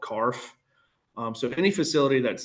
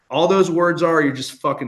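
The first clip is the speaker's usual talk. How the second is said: plain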